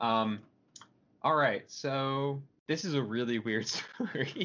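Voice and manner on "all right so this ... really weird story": slow speech, chuckling all the way through. Introducing a weird news story, laughing while talking. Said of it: "I don't know why I'm laughing".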